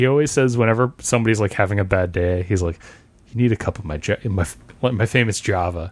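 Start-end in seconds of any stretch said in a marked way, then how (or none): none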